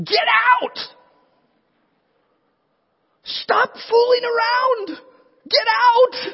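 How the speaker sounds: mock very high scream, slow, deliberate, drawn out. Reading the story this week, recalling screaming at Lot inside their head: retelling screaming at Lot. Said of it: "I'm screaming at Lot".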